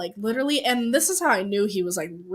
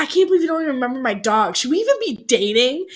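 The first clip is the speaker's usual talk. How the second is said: outraged, accusing, angry screaming yell; 4 semitones higher, 3 dB louder than usual. Telling a story to a friend about an early phone argument with a partner, acting out his words as angry yelling. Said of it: "he's like screaming at me on the phone".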